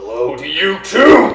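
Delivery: furious, angry shouting voice. A talking sword greeting the one who connected with it, angry yelling sword voice. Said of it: "Why are you yelling?".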